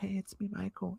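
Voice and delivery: very soft, high, creaky voice. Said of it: "in private he would have a deeper voice".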